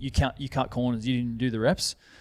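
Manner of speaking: usual speaking voice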